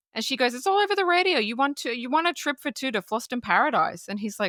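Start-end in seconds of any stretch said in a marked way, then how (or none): 0.6-4.1 put-on pitched-up Brooklyn accent. Retelling a movie scene where a mother tells her son about a won trip, brooklyn accent. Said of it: "like New York, uh, Brooklyn accent".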